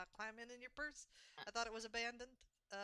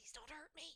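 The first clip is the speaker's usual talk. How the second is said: very quiet, tiny, high, hushed voice; 5 semitones higher, 7 dB quieter than usual. Voicing a small creature begging from someone's hands: very quiet plea. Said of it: "you hear very quietly from her hands".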